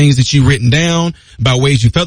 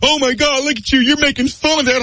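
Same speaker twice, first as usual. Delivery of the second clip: mock outraged tone, higher; 10 semitones higher, 4 dB quieter than usual. Imitating an upset viewer accusing the speaker of mocking: imitating an angry viewer. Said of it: "you are boiling right now".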